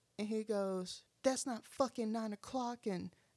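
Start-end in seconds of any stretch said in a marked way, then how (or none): 1.2-2.9 put-on rude yelling with cussing. Retelling a man's outburst at a store before opening time: retelling a rude yell. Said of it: "just yelling".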